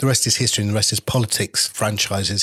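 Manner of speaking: plain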